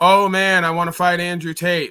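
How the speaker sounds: mocking, sneering, boastful tone. Mocking a boxer who talks about who he'll fight next: mocking Jake Paul impression. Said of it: "if I was on here like Jake Paul".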